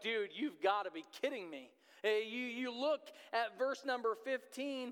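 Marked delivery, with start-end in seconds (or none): 0.0-1.7 put-on sarcastic, disbelieving tone. Voicing James answering a hollow blessing: imitating James being sarcastic. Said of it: "I could almost hear the sarcasm in James' voice".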